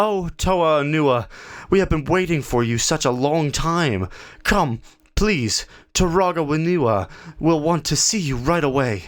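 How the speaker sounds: excited cry, high, hurried and eager. Reading a small figure greeting Toa Onua after a hurried bow: crying out. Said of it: "[name] saw a small figure hurrying across the park. / The figure glanced over his shoulder and then stopped short".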